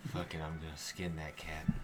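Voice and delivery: low, soft, angry grumble under the breath. After handing the phone to Nani, the speaker vents, pissed off at the cat. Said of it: "I'm just so pissed off at that cat".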